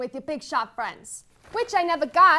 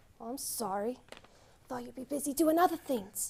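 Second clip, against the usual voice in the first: hushed half-whisper, very soft, barely there; 3 semitones lower, 12 dB quieter than usual. Coming home late at night, apologizing to someone awake: half-whispering. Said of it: "What are you whispering for?".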